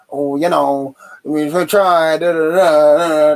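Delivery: every "da" dragged and stretched out. Mocking what the manager will say in his press conference: shit Bruce impression. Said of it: "That's a shit Bruce impression".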